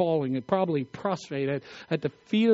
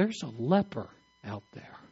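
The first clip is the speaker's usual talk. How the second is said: ordinary delivery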